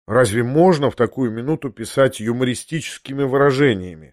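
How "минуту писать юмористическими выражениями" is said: plain reading voice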